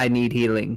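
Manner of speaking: flat, expressionless. Answering a party member who asks if they're fine, deadpan. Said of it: "I look at you like deadpan".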